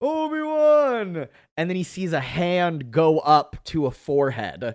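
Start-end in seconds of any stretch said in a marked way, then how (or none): 0.0-1.3 very high, stretched-out, drawn-out shout. Retelling an actor calling across a set to find someone: imitating a shout.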